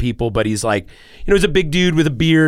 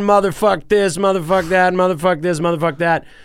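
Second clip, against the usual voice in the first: put-on drunken yelling, much higher; 6 semitones higher than usual. Describing a group of drunk guys at the restaurant, imitating them yelling. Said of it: "they're just yelling".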